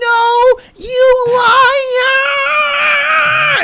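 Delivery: acted very high shriek, the word liar stretched out. Retelling how a little girl at a slide grabbed him: imitating a girl screaming. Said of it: "she screams so loud".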